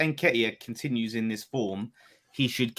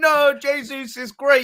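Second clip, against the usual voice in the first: mock indignant, outraged defensive tone, higher and louder; 7 dB louder than usual. Imitating the other speaker defending a player: imitating an indignant defensive outburst. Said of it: "you've done your typical Arsenal defense mode going".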